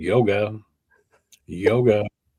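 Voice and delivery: unbothered, casual, tossed-off, offhand delivery. Imitating how a man says yoga without yelling: mock-nonchalant, casual. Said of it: "He just like says it all nonchalant too".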